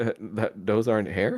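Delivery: earnest, sincere and puzzled confusion. Voicing a character who looks at another player: sincere confusion. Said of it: "with the most sincere".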